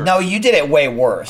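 ordinary talk, nothing marked

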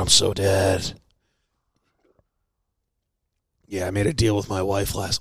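whispering. Telling about a deal made over doing the dishes, whispering. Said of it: "why am I whispering?".

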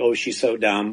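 ordinary talk

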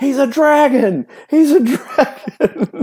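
shrill screamed cheer, pitched way up, acted out. Retelling how a player's dad shouted from the stands, imitating a father screaming. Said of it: "standing in the stand screaming".

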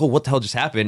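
ordinary talk, nothing marked

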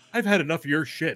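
very calm, cool, even, unbothered delivery. Describing a game weapon move, acting out the hero's line: imitating Cloud saying it calmly. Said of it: "he'll say the line so calmly".

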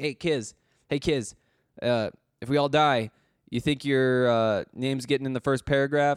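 ordinary delivery

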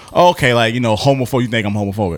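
ordinary talk, nothing marked

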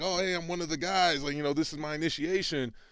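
put-on forced casual, high, breezy, laughing it off. Retelling being held down in a locker room: imitating acting cool and laughing it off. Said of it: "trying to laugh it off and act like I'm cool".

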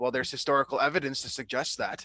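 snobbish, self-satisfied voice. Imitating Aaron Rodgers answering a question on a show: smug, snobby Aaron Rodgers voice. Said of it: "kind of snobby voice".

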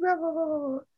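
tiny, squeaky, very high cartoon voice. Audiobook narrator showing the voice they used for Piglet, squeaky Piglet voice.

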